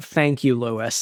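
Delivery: put-on, really condescending tone. Retelling how a j answers lewis: imitating a j, really condescending. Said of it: "really condescending".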